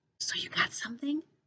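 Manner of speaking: very quiet, hushed, breathy whisper. Reading a story aloud, a character asks a question: whispered. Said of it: "She whispers".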